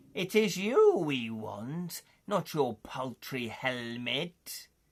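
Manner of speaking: hissed words. Narrator reading the orc leader's line to the player, hissing. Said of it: "the leader hisses".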